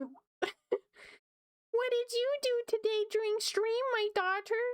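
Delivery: put-on voice spoken in a British accent. Pretending to be their mom talking to her daughter, imitating mom with British accent. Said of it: "I keep making her British".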